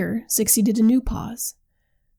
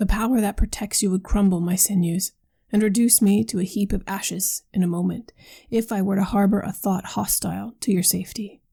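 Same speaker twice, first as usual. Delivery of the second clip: ordinary delivery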